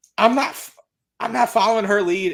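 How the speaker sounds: put-on heavy country accent. Retelling how one of the Nitro Girls got mad backstage, as A.C. Jazz in the thickest country accent. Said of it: "in probably the thickest country accent".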